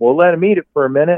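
put-on Southern drawl. Quoting the guy he went fishing with, in a Georgia drawl. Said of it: "with that Georgia drawl".

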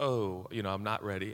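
ordinary talk

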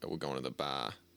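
over-the-top Boston accent, r dropped. Explaining that boston speech drops the letter r, exaggerated boston accent, r dropped. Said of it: "They don't say, like, the letter R there. ... Very extreme, exaggerated".

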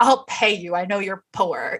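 mock-condescending tone. Describing a story, speaker acts out how he would ask for help, mock-condescending. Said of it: "he probably condescendingly is like".

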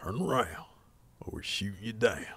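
very quiet, low, hushed military voice. Retelling how military jets warn intruders, imitating a military jet warning. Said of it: "They use that same exact voice".

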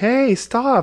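very high-pitched yelling. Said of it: "he's like".

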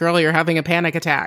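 ordinary talk

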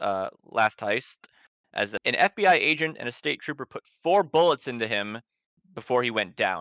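normal talking voice

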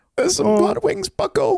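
very high, rough, creaky voice. Imagining Jordan Peterson on a show eating hot wings, do a Jordan Peterson impression. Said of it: "He's got such a distinctive voice".

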